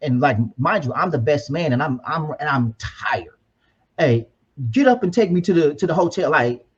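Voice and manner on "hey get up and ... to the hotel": put-on bossy, commanding delivery. Best man retelling his brother ordering him around, imitating brother's bossy order. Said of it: "he ordering me around".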